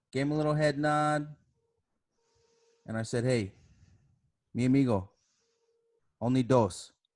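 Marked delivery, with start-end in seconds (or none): 3.2-6.9 mock easygoing, polite, unhurried, calm and friendly. Retelling own reply to a man who kept coming back: retelling own calm, nice, firmer line. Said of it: "I just said it very calmly, very nicely".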